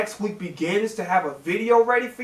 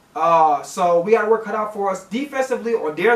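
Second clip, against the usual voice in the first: ordinary talk, nothing marked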